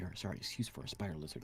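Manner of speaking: hushed whisper, muttered under the breath. Speaking in character, insulting someone: muttered under the breath. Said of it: "I say under my breath".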